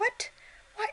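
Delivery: very high, shocked, disbelieving "what". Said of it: "guys are probably like".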